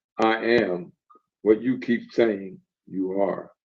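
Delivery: soft, powerful voice. Retelling what a stranger answered when asked who he was, soft, powerful voice. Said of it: "with a soft, powerful voice".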